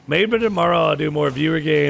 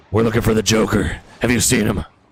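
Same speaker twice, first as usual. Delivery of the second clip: deep, low caped superhero vigilante voice; 5 semitones lower, 3 dB louder than usual. Trying the impression again although your throat is wrecked, attempt a Batman voice. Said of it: "I can't do it. My throat's fucked".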